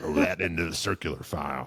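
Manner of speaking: froggy, croaking gym coach voice. Retelling what the gym teacher said to a late student: imitating Mister Bell's frog voice. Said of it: "Try that again".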